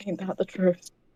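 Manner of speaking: very quiet under-the-breath mutter. The speaker voices a character's reaction during the scene; under the breath, really quiet. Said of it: "under their breath, really quiet".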